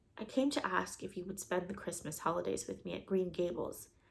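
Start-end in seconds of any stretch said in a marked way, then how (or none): none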